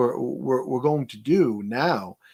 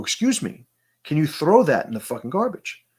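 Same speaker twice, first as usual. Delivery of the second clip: loud, raised voice, acted out; 3 semitones higher than usual. Retelling asking a littering man to use the bin: retelling raising his voice. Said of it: "I raise my voice and I go".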